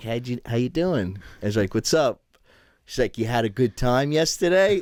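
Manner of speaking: put-on grinning, laughing tone. Retelling a friend's teasing phone call: imitating a grinning, laughing tone. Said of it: "like a grinny, like, like, tone to her".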